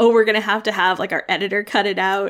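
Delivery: ordinary talk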